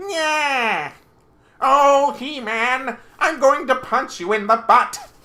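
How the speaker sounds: very loud, high-pitched, taunting cartoon-villain voice. Missing the eighties cartoon, quoting its villain: Skeletor voice. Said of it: "in that Skeletor voice".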